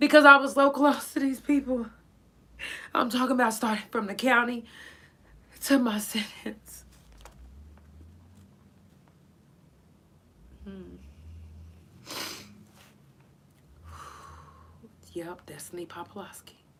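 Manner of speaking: swooping voice, overcome with emotion. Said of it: "I had no clue I was gonna get this emotional".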